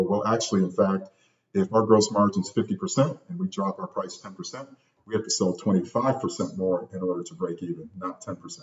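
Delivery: ordinary delivery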